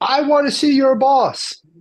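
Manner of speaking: put-on shrill, loud, high-pitched angry screaming. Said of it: "this customer is screaming and hollering".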